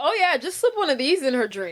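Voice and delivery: put-on casual, offhand tone. Retelling a film scene where a character offers a drug: imitating a casual tone. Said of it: "He says it, like, so casual".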